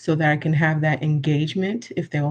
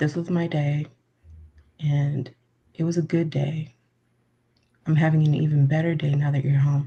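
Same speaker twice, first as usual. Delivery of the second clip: deliberately lowered, low speaking tone. Showing how they'll speak to someone arriving home: lowered tone of voice. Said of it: "I will speak to you in this tone of voice".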